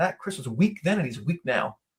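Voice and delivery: ordinary talk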